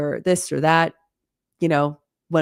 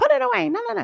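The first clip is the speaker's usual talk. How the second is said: very high-pitched, nagging shout. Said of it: "constantly shouting at my kid".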